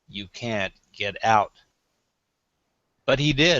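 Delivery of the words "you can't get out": low, scornful, contemptuous, disdainful tone. Telling a joke, voicing the man watching from the back of the grave, retelling a low disdainful line. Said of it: "in a low, disdained voice".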